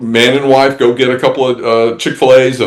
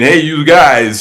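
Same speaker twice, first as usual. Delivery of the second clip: mock Northern American accent; 3 semitones higher than usual. Showing an accent asked for at voiceover auditions: Northern accent. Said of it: "or Northern accent".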